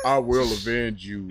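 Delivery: put-on deep sassy voice.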